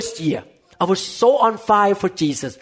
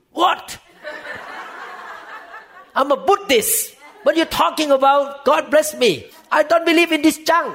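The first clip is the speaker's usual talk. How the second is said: put-on forceful, strong, high-pitched yell; 7 semitones higher than usual. Retelling how mom answered a blessing: imitating mom yelling strongly. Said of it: "She said like this, very strong, and she yell at me".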